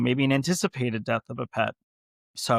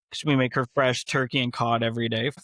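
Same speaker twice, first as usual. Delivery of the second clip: ordinary talk, nothing marked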